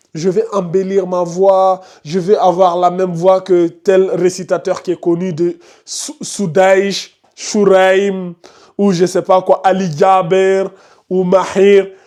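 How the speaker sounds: normal talking voice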